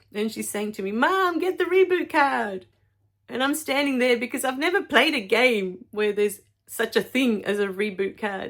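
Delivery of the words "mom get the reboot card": put-on, frantic, urgent, high yelling. Mother retelling her child yelling at her during a game: imitating panicked yelling. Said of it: "Because she was yelling at me".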